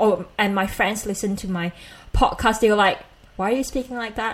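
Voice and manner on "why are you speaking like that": ordinary talk, nothing marked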